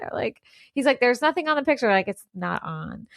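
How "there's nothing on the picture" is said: high, ditzy, airheaded yell rising upward. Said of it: "he's, like, yelling up the chimney".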